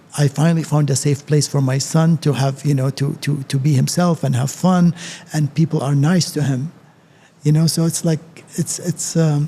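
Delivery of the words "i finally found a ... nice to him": usual speaking voice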